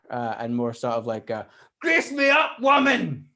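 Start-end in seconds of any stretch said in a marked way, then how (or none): 1.8-3.1 very loud, slow delivery. Acting out own greeting, less cool than hoped: Groundskeeper Willie voice. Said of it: "groundskeeper Willie from The Simpsons".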